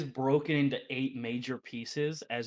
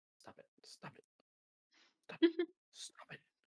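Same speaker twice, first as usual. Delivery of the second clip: very quiet, barely voiced, pleading whisper; 10 dB quieter than usual. Whispering to another player to stop laughing: whispering. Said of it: "The whispered "Stop it's" were getting me".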